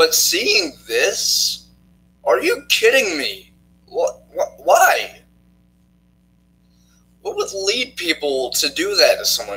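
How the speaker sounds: very high voice, breaking and swooping. Reacting to fans harassing someone into quitting, voice cracking. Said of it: "My voice cracks".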